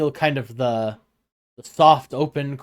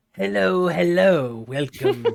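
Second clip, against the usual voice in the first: hucksterish, snake-oil salesman sales-patter voice; 4 semitones higher than usual. Told to do snake oil salesmanship, speaker greets the listener: snake oil salesman voice. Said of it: "I was gonna do this voice".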